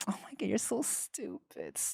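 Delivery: put-on, high, breathy, whispery voice, whispered. Describing how someone used to talk, the speaker imitates them: slightly higher, whispery voice. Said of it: "a little bit higher, a little more whisperier".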